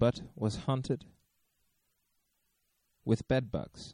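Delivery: slow, spooky storytelling voice. Showing how he tells scary stories to children, slow scary-story voice. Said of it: "and I speak like this".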